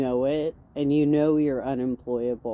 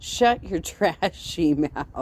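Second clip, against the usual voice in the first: usual speaking voice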